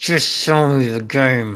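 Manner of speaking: words forced through clenched, gritted teeth. Retelling how a father answered him about buying a game for his son: retelling a gritted-teeth reply. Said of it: "just through gritted teeth".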